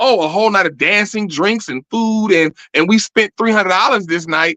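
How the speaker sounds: ordinary talk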